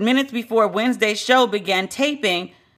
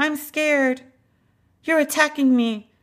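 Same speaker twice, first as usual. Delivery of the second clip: put-on weepy, wounded, high, whimpering tearful voice; 5 semitones higher than usual. Imitating a reaction that the talk describes as crying: imitating crying.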